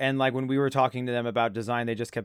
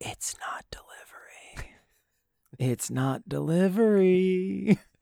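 very slow, hushed, under-the-breath whispered muttering; 6 semitones higher than usual. Joking about editing out whispers from the podcast: imitating Maddie whispering under her breath. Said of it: "Maddie just whispering under her breath".

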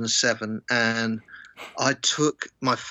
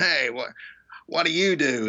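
big, booming, put-on American voice, much higher; 4 semitones higher than usual. Retelling a man who sat down beside them, the speaker does his big, loud voice. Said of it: "big, loud sort of voice".

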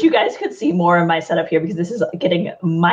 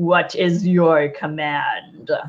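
low, deep, annoyed, irritated grumbling voice; 3 semitones lower than usual. A flaming tornado appears beside a player and grumbles, in a deep irritated voice. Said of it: "in a deep and rather irritated voice".

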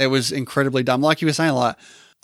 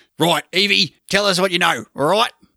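put-on Australian accent, pitched up higher; 5 semitones higher than usual. Suggesting Hugo Weaving should cover it, doing a Hugo Weaving Australian accent. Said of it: "just do his Australian accent".

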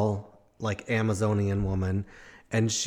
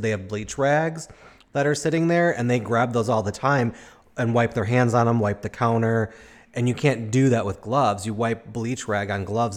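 ordinary delivery

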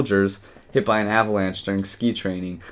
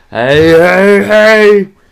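very loud, high-pitched, goofy cartoon shout; 12 semitones higher, 16 dB louder than usual. Re-enacting what a man did without even smiling: Fat Albert voice. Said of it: "he did the fat Albert voice".

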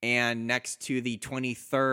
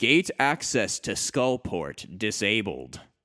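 slow, disembodied computer-voice announcement, like text-to-speech. After a button press, a disembodied voice fills the room, Microsoft Sam voice. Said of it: "It is a magical disembodied male voice. / It is a magical disembodied male voice. Okay. So it's like Microsoft Sam or whatever. Yeah, basically. It is the magic equivalent of Microsoft Sam. / It is a".

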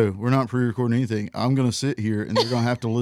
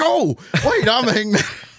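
put-on sudden, jolted realization; 11 semitones higher than usual. Imitating the other speaker suddenly remembering his own name: imitating a sudden realization. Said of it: "it sounded like y-, you just remembered who you were".

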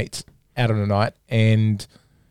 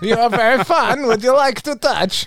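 put-on Russian accent, high and loud; 14 semitones higher, 6 dB louder than usual. Showing how someone posed as a Russian tourist, in a Borat voice. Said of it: "start speaking like that".

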